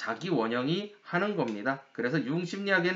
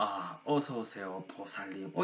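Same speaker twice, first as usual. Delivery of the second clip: voice dropped very low, hushed and deep; 8 semitones lower, 9 dB quieter than usual. A monk greeting a professor at the temple with a slow bow, lowered deep voice. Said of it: "약간 목소리를 깔고".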